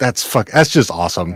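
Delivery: ordinary talk, nothing marked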